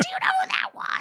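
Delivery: very high, excited, freaking-out squeal.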